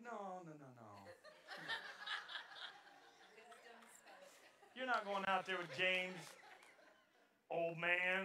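low, hushed, firm scolding tone. Retelling how Sarita answered him about going out with James, imitating Sarita's tone. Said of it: "that was in her tone".

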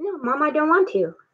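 pet cat character voice. Voicing a pet cat refusing to come when called: voicing the cat. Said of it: "He's like".

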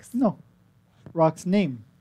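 put-on talking parrot voice, macaw-like. In a role-play, a player voices a blue macaw asked about its name: talking macaw voice. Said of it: "And he's a blue macaw".

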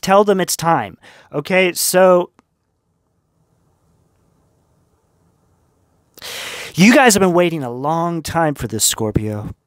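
moved, emotional, choked-up, welling-up delivery. Giving a scorpio reading to viewers; getting emotional. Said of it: "I'm getting like emotional right now".

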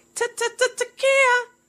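high-pitched, mocking voice.

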